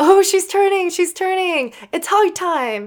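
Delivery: put-on high, loud, excited child shout. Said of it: "another one shouted".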